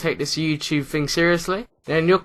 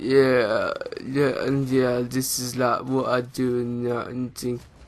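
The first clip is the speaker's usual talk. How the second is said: grumpy, listless, quiet, flat, bored, low-energy; 3 semitones lower, 3 dB quieter than usual. Showing how not to speak in a video: quiet, bored, grumpy tone. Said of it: "speak like this. ... you sound boring ... Like in the grumpy mood, attitude like this".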